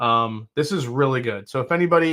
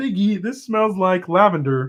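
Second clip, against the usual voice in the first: high, pitched-up cartoon frog puppet voice; 5 semitones higher than usual. Tasting something and speaking to Piggy in a Kermit the Frog voice. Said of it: "I think I could only do Kermit".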